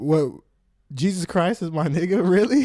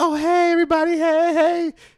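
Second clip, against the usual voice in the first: very light, very high little voice, drawn out; 12 semitones higher, 4 dB louder than usual. Imitating a coworker greeting everybody in the store: imitating someone's lightest voice. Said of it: "the lightest voice".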